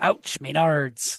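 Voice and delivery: put-on pirate voice. Retelling what the head does on seeing a menards: pirate voice. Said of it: "a pirate voice in my head, and I go".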